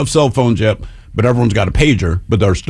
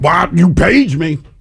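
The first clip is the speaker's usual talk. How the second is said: high, drawn-out screaming; 7 semitones higher than usual. Retelling a man screaming into a pay phone: imitating someone screaming. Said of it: "he's screaming at them about".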